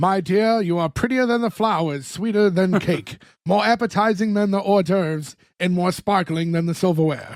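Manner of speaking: put-on classic old-time Hollywood movie accent. Acting out a reply in a quoted exchange, in an old-time Hollywood accent. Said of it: "what old time Hollywood accent he was doing".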